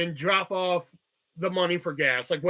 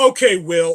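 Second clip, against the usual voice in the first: mock snarky tone, louder; 9 dB louder than usual. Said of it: "she got all snarky with me".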